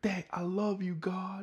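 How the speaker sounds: very high, drawn-out pumped cry. Acting out a man speaking to his dad mid-story, imitating someone so pumped. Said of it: "he is so pumped".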